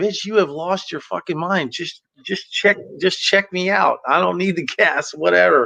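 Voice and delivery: furious, angry, heated cursing. Recounting how he yelled right back at her: retelling an angry yell. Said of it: "I'm yelling right back at her".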